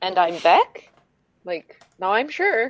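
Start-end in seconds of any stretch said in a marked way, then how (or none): 0.0-0.9 question-like upward rise on Beck. Showing how the speaker introduces themself, rising on Beck like a question. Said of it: "I always go up at the end, like you do for a question".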